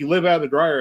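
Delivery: ordinary talk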